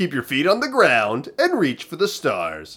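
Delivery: animated voice with pitch swooping up and down. Imitating how the speaker being discussed sounds: Casey Kasem voice. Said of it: "I apologize for our Casey Kasems".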